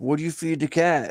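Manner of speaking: demanding, insistent high-pitched shout. Retelling what others asked, imitating someone yelling at the speaker. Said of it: "yelling at me".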